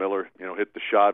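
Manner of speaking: ordinary talk, nothing marked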